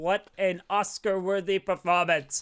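ordinary talk, nothing marked

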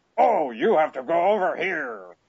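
very high, swooping, stretched-out dubbed voice. Imitating a voice actor from an awful dub: Galvatron dub voice. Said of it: "I don't even know if I could do his voice justice".

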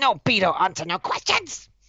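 very high, swooping put-on goblin voice. Voicing the stabbed goblin crying out in pain: goblin voice. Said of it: "He just starts flailing around with his scimitar".

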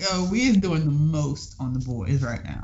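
ordinary talk

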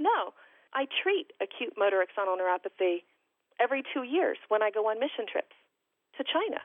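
plain

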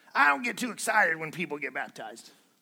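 put-on raspy radio-preacher voice. Speaker quotes a man who was on the radio, imitating a raspy voice. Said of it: "He kind of had this raspy voice".

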